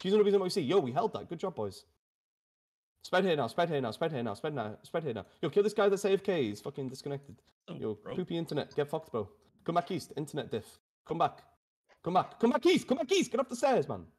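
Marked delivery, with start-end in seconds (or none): 7.7-14.0 heated, annoyed, angry rant with swooping pitch. Calling out orders to teammates during a game match, angry. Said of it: "I get a bit angry sometimes".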